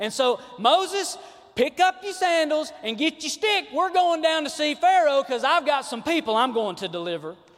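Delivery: put-on very loud country accent. Speaker retells god's words to moses, in a little country accent. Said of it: "I got a little country right there".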